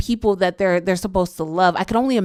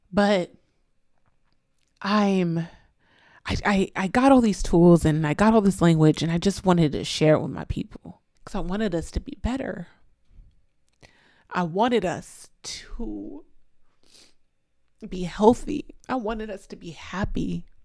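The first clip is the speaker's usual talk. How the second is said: tearful, weeping with happiness. Speaker wanting to share tools and language with their people, crying happy tears. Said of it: "I'm happy I'm crying".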